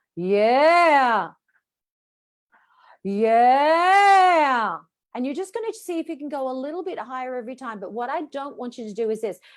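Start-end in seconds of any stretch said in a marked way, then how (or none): 0.2-4.8 full, firm, loud, drawn-out projected "yeah". Showing a vocal exercise in the lower speaking range: strong low projected "yeah". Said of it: "strengthen that bottom range of the voice".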